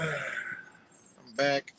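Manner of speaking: tired sigh.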